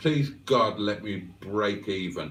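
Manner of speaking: ordinary talk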